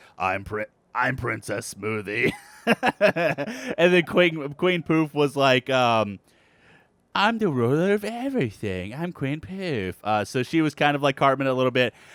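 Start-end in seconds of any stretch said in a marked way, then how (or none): 0.2-2.3 rough put-on voice, lower, quieter. Showing the voice the speaker once gave Princess Smoothie: really rough voice. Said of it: "I gave her like a really rough voice".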